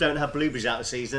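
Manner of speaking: plain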